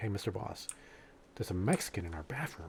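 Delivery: very quiet, hushed, leaning-in whisper. Retelling a story his dad told: imitating someone whispering. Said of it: "leans in and starts whispering to the guys".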